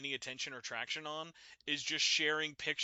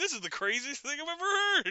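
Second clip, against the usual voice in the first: put-on skeptical tone, higher and louder; 12 semitones higher, 7 dB louder than usual. Imitating the other speaker starting a stream: imitating someone doubtful. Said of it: "Be like".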